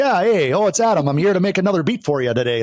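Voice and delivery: Wisconsin way of talking. A music producer shows how he should have sounded in his videos, Wisconsin accent. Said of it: "that's how my people talk up in Wisconsin".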